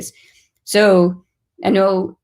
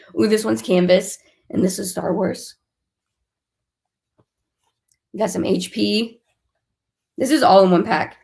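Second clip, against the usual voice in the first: voice going, giving out. Showing items to viewers, with the voice going. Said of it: "my voice is going".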